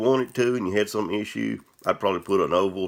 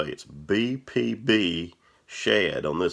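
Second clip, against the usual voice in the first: much slower, drawn-out delivery; 3 semitones lower than usual. Speaker says the hard-to-say name of this thing, saying it very slowly. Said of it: "I can say it real slow".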